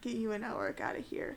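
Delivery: whispered speech. Playing a character hugging Ava goodbye: whispering in someone's ear. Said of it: "I'm gonna whisper in your ear".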